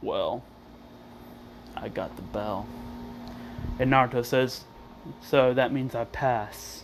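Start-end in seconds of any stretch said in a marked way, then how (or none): 0.0-2.7 lifeless, dead voice, breathy, almost whispered. Retelling a scene where Naruto says he got the bell: Naruto line in a dead voice. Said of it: "he says it like in a dead voice".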